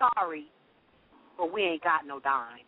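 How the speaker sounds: flat, straight-faced, very slow, low deadpan. Retelling what the girl at the register said: imitating a deadpan delivery. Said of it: "with a straight face said to me".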